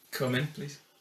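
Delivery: level, flat, expressionless deadpan. Playing a dentist in a deadpan improv, calling the patient in: deadpan delivery.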